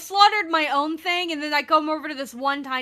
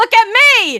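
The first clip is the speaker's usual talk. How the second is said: in-character, very loud, high scream; 8 semitones higher, 10 dB louder than usual. Playing a character who calls a creature's attention: screaming in character. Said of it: "She just screams at it".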